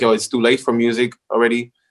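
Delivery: ordinary delivery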